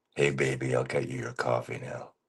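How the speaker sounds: soft, sleepy, just-woke-up morning voice. Asked by another speaker to say a line, early morning voice. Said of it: "your early morning I talked a lot voice".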